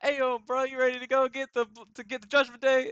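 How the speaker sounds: very loud, high, hyped-up shout. Acting out a wrestling scene, urging a partner to go fight: imitating a super hyped up Jey Uso. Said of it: "And Jay's like".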